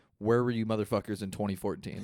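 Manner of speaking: usual speaking voice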